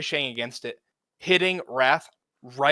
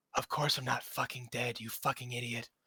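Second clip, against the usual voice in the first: barely audible, very faint, hushed half-whisper; 2 semitones lower, 11 dB quieter than usual. Voicing a voice carried on the wind through shifting fog: very faint half-whisper. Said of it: "you hear very faintly".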